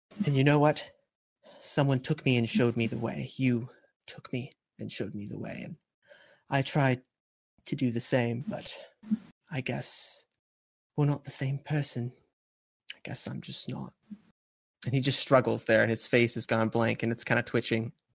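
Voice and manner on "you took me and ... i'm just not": sad voice, slower. A character speaking to the one who once showed them the way, in a sad voice. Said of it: "Do I hear sadness in your voice?".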